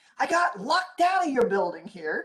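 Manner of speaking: put-on, high, swooping, top-of-the-lungs screaming. Retelling a man who disrupted a quiet room, imitating a man screaming. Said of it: "He's like screaming".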